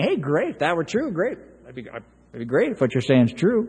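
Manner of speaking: facetious, lilting with rising ends.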